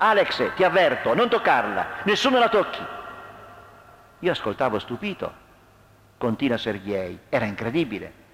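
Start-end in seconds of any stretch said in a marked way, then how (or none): 0.0-2.8 raised, menacing, ominous voice. Victor, raising his baton, warns Alex away from Natascia; threatening. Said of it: "disse in modo minaccioso".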